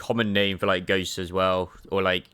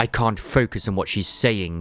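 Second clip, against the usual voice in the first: ordinary delivery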